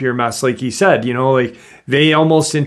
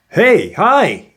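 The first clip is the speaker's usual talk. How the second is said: put-on startled, surprised, pitched-up voice; 7 semitones higher than usual. Retelling how he said hello: imitating a surprised greeting. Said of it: "like a su-, a surprise".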